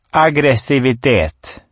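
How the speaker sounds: fairly loud. The Mymble answers a question, fairly loud. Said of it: "svarar mymlan ganska högt".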